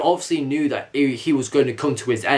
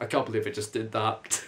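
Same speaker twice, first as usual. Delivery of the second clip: ordinary talk, nothing marked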